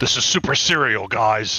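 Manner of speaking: loud, grave, menacing, dead-serious voice. Giving a report in the game: scary serious voice. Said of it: "my scary, serious voice".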